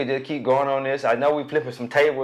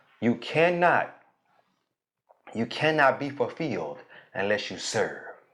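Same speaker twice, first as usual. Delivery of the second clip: very slow, deliberate, every word weighed; 3 semitones lower, 4 dB quieter than usual. Speaker driving a point home to listeners, very slow. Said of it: "I'm gonna say it real slow".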